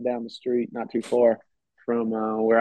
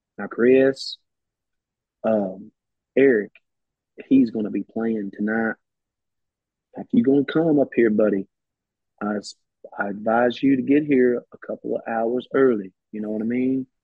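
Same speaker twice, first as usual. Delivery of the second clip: relaxed, easygoing, laid-back Louisiana voice. Recalling a late friend's phone call about a show, imitating Rick Tiger, calm, laid-back. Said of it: "he always had this real calm, laid back".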